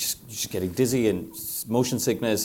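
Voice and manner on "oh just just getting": ordinary delivery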